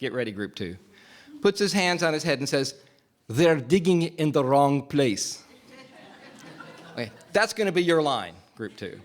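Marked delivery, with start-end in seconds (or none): 3.3-5.4 slow, put-on Egyptian accent. Speaker acting out a scene for the group, Salah's British fake Egyptian accent. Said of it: "in his British fake Egyptian accent".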